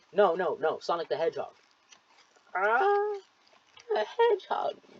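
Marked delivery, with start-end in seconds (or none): 2.6-4.8 put-on old grandma voice, much higher. Imagining asking an 80-year-old grandma about Sonic, answering in a put-on grandma accent. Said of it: "pardon my grandma accent".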